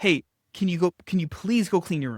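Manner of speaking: falling inflection on "room" at the end. Demonstrating tonality to get people to comply, with downward inflection. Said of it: "More downward".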